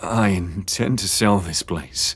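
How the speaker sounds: murmured through clenched teeth. Narrating a novel, James speaks to the others, murmured through clenched teeth. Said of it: "James murmured through clenched teeth".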